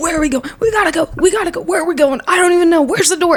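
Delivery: acted, high, frantic, panicked screaming. Retelling how everyone ran around unable to find the way out: retelling panicked screaming. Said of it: "running and screaming like".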